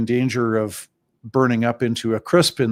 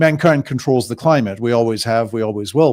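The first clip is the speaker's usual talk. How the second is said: ordinary delivery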